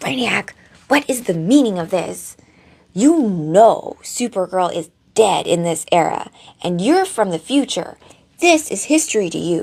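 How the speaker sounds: harsh, furious loud whisper. Retelling a scene, speaker acts out Superman confronting Brainiac five: mock-angry Superman half-whisper. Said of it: "He's like whispering in like angry tone".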